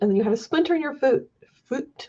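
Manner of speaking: brief touch of Scottish accent. On stream, talking to a fellow reader, slightly Scottish-sounding. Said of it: "That sounded very Scottish for a second there".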